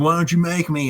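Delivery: put-on sloppy, slurred, drunken yell. Retelling a drunk man answering someone who yelled at him, imitating drunk slurred yelling. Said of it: "he's slurring his words, he's yelling".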